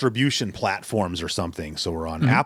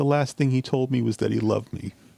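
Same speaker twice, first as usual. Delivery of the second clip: mock crying, tearful voice; 4 semitones higher than usual. Describing a movie scene, the woman interviewed by a news crew, imitating someone crying. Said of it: "and she's crying".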